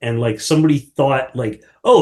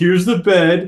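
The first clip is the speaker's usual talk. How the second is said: mock sobbing voice, higher pitch; 5 semitones higher than usual. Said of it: "constantly sobbing".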